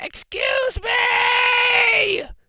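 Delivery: loud screech with the end dragged out. Recapping a show where she interrupted commentary: screechy Vicky Guerrero voice. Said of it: "she had that screechy voice".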